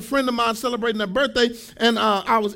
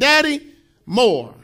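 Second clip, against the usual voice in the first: loud, squeaky little chipmunk voice; 5 dB louder than usual. Retelling how his daughter asks for more food: imitating a chipmunk voice. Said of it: "chipmunk voice saying".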